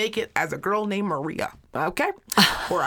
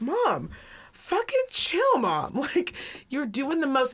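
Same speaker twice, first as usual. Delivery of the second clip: put-on, exasperated, fed-up, high, swooping scold; 7 semitones higher than usual. Retelling a car ride, quoting the son telling his mom to chill, imitating exasperated son. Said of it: "And he goes".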